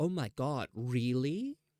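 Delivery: very slow, sarcastic, exaggerated mock disbelief and surprise. Showing how to mock a friend who said something dumb: exaggerated sarcastic mocking. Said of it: "imagine you're mocking one of your friends. They say something dumb and you go like".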